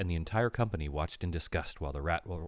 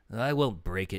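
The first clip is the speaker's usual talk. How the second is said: snarled, snarling comeback. Narrator reads Templeton's retort, snarling. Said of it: "snarled Templeton".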